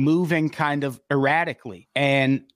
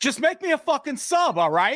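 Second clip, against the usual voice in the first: put-on heavy New York accent, very high-pitched; 12 semitones higher than usual. Retelling a Subway customer's order to the sandwich maker, thick New York accent. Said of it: "He had a thick New York accent".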